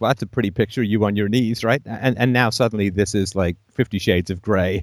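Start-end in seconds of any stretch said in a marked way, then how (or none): none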